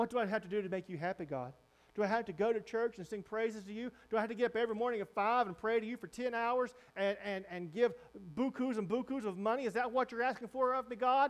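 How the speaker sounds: dry, sarcastic delivery. Acting out people asking God what more he wants: imitating sarcastic complaint. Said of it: "now they're getting a little sarcastic with it".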